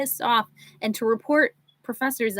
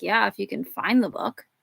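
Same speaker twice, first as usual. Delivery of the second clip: put-on, mock mutter under the breath; 2 semitones lower than usual. Retelling what she said to a man she didn't like, retelling an under-breath mutter. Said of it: "But like under my breath".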